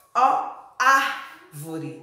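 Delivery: very slow, stretched-out open Á in árvore.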